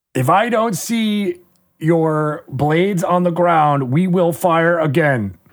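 measured, deliberate, high calling voice. Game master voicing a city guard giving the players an ultimatum: calling down a ladder. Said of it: "They're calling down the ladder".

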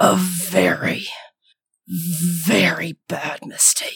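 slow guttural growl with a breathy edge.

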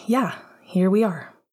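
ordinary delivery

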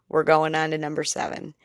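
rushed, fast, hurried delivery. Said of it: "which is why I'm talking kind of fast".

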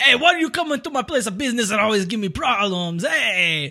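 Italian crime-boss accent. Playing a crime lord complaining to the police, in an italian crime lord accent. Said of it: "you as a crime lord has an Italian accent".

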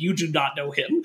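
mild half-shout at conversational level. Retelling a movie scene, a character shouts at the Soviets: imitating someone shouting. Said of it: "shouting at the Soviets, like".

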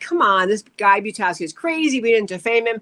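plain

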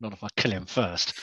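low, soft mutter under the breath. In a role-play, Ilmarin speaks loud enough for Mordek to hear, muttering under his breath. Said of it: "Ilmarin says under his breath".

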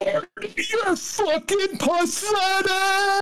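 put-on piercing, very high, shrill, all-out scream. Retelling how a fan next to them screamed at the team: imitating a fan screaming. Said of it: "just screams".

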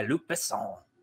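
whispered, breathy French-accented pronunciation. Naming the producer of a french action movie: french accent on luc besson. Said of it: "I did that French accent".

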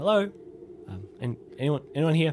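spooked, frightened calling out. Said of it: "call out in a low voice".

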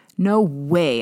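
hissing. Answering a boy who insists you ran into him: hissed. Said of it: "I hissed".

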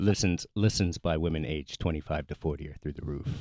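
joking seductive voice. Trying out a bedroom voice for the podcast audience: mock bedroom voice, lower. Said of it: "just sounds like you, just like lower".

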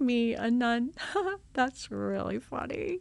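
slow, chuckling through the words, laughing disbelief. Retelling walking back to the dorm room: retelling own laughing words. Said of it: "I was laughing".

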